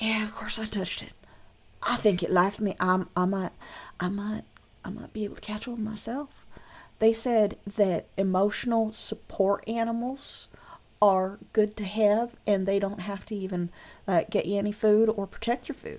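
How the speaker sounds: not-quiet whisper. Voicing a boy bragging to his friends: loud whisper. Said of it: "not particularly quietly, whispering".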